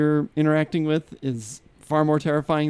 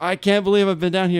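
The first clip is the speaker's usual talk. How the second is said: frantic, overwhelmed, freaked-out, disbelieving outburst; 4 semitones higher than usual. Retelling the wife's reaction on being found: imitating someone freaking out. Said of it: "she's freaking out".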